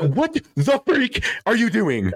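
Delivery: put-on very high, swooping, stretched-out screech. Imagining someone finding him asleep, imitating Natalie screaming. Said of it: "calling me to scream at me".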